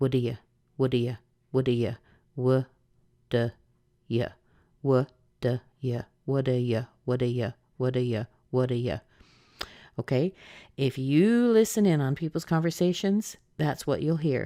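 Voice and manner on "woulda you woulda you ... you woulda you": very, very fast, run-together reduced pronunciation. Teaching how people really say it in conversation, very fast reduced speech. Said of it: "they're just saying it very, very quickly".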